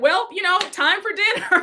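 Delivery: uneasy, awkward line. Retelling how awkward Angel announced dinner: imitating Angel's awkward tone. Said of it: "even Angel felt awkward".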